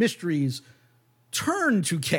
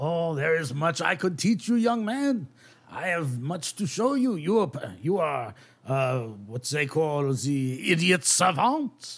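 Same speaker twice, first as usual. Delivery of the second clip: put-on French accent. In a game, a character speaks to a young man: put-on French accent. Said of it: "I'm sure all of our French listeners will love my accent. / he goes over and he like closes the door, / I'm sure all of our French listeners will love my accent".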